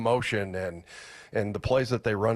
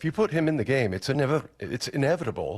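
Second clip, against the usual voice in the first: put-on tentative, pitched-up English accent; 5 semitones higher than usual. Quoting how Aiden Dirty talked about Ernest Jones: imitating Aiden Dirty's English accent. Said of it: "I'm trying to do my English accent".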